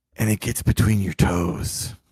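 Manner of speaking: sultry whispery voice. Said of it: "I'ma need you to stop this voice right now".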